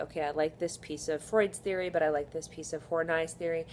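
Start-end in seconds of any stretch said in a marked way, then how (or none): none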